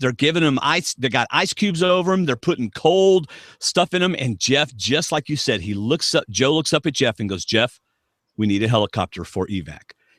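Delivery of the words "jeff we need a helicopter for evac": put-on utterly grave, matter-of-fact, low, dead-serious tone. Retelling what a medic on a show said: imitating Joe's very serious tone. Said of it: "in the most serious tone".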